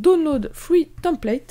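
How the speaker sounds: slow, heavily French-accented, badly done English.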